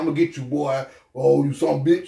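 put-on Southern Texas country cop accent. Describing a movie character at the film's beginning; imitating a Southern accent. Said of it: "he had that Southern accent".

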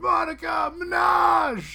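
very high hoarse acted yell. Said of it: "he yells".

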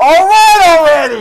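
very loud holler. Repeating his yelling bit after being cheered on, in an Adam Sandler yell. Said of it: "he just blew y'all's ears off".

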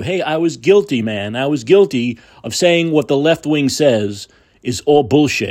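ordinary delivery

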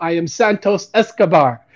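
put-on slow, deliberate Latin American accent. Describing a memorable moment, quoting Santos Escobar introducing himself in Santos Escobar's accent. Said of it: "in like his in the in his accent".

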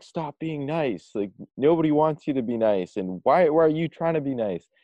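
acted full-on shouting, high-pitched. Retelling a loud coach guru's advice: imitating Dan Pena yelling. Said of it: "he always yells, it's just, like, yelling, like".

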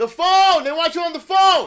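shrill, very loud, high-pitched shout. Retelling someone calling Gramps to the phone, retelling a shout. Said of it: "You went over the Richter scale".

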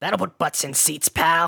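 promoter voice, wrestling style. Closing a joke about a podcast episode plan: Vince McMahon impression. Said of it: "That's my Vince McMahon impression".

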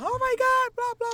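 high, loud mock shout.

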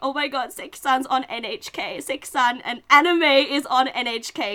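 put-on very loud, very slow, drawn-out joyful crying. An anime fan retells seeing anime on NHK, retelling crying. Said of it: "just crying".

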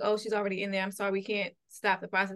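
ordinary delivery

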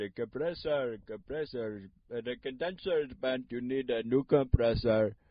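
put-on Indian accent voice. Retelling what a man checking the speaker's car said, in a put-on Indian accent. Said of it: "I got a different Indian voice for that one".

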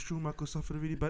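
mock-sad tv announcer voice. Recalling a TV report that a man had died, imitating the sad TV voice. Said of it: "The sad voice".

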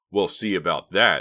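threatening. Narrator reads a character told he isn't invited to a party, menacing. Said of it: "said Bobby menacingly".

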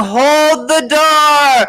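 high scream. Retelling a scene from a show, imitating someone screaming. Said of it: "he's screaming".

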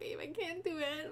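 high, drawn-out, tearful sobbing voice. Retelling starting to cry behind the wheel after hitting something, retelling crying. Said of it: "I start crying".

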